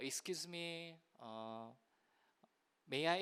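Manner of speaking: soft, timid, polite voice.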